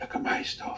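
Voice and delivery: very quiet, tiny, breathy whisper. Describing shy artists trying to get noticed: quiet little whispering voice. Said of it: "a really quiet little voice whispering".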